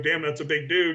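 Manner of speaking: ordinary delivery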